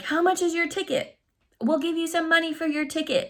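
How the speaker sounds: put-on high hollering. Retelling what an acquaintance yelled to the speaker by the car, retelling a yell. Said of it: "he's like yelling like".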